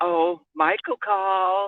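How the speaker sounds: slow, drawn-out, teasing and knowing tone. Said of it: "Why are you saying it like that?".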